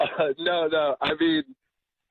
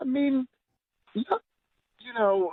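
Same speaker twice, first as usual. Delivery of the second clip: voice going really high in pitch; 8 semitones higher than usual. Pressing for a specific reason after a date story, voice going really high. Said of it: "voice just went really high".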